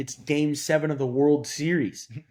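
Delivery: plain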